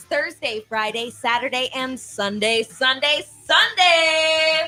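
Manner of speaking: put-on speedway announcer, "every Sunday" stretched like promo. Announcing the Eagle Raceway Sprint Car Nationals, James Rowland announcer impression. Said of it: "I'm going to do my best James Rowland Eagle Raceway announcer impression".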